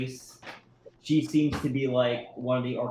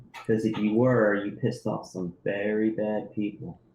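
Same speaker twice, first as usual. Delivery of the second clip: secretive whisper, lower pitch; 4 semitones lower than usual. Voicing a woman who pulls the player close, whispering in their ear. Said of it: "she's gonna whisper in your ear".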